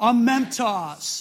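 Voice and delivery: passionate, energetic delivery. Leading listeners in repeating a word together, saying it with passion and energy. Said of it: "Now say it with passion and energy".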